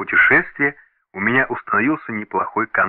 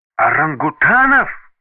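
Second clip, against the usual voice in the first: gasped in shock, higher and louder; 5 semitones higher, 4 dB louder than usual. A narrator reads a woman's reaction to news of a purchase, gasped. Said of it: "Ахнула Джеки".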